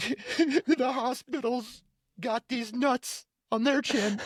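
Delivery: put-on tearful voice. Retelling a character crying but still saying the joke: imitating someone crying while joking. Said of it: "crying, but he's still saying the joke".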